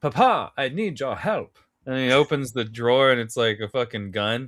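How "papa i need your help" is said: swooping, wide-swinging, hammy over-the-top pitch. Retelling a scene from The IT Crowd: Matt Berry impression. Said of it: "he was like".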